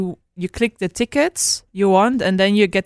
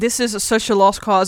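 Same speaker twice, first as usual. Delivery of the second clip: usual speaking voice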